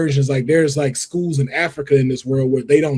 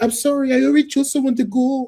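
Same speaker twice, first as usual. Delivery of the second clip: put-on Irish accent at a very high pitch; 10 semitones higher than usual. Imitating Cho Chang saying she already chose someone: imitating Cho Chang's Irish accent. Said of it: "Is that your accent?".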